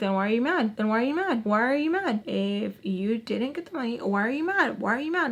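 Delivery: mock-taunting, antagonizing tone. Retelling an argument about money with a woman, retelling a taunt. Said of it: "Like just antagonizing her in that way".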